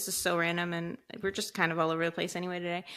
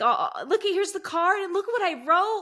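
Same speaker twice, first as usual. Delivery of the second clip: put-on very high, loud, happy, eager child voice; 12 semitones higher, 5 dB louder than usual. Mother retells her son giving her an early Mother's Day gift, imitating a happy, eager son. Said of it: "he was like so happy".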